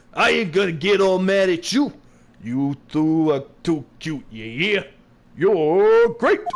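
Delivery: put-on Brooklyn, New York accent. Voicing a character in the scene after being told to do a brooklyn accent. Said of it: "you gotta do a Brooklyn accent".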